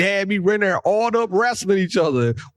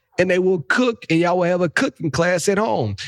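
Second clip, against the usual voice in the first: plain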